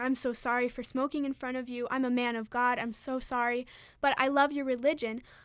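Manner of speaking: usual speaking voice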